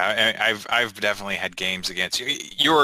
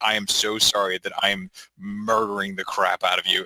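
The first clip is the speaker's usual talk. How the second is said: mock apologetic voice. Imitating another speaker apologizing to an opponent while winning: imitating someone apologizing. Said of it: "where you're just like".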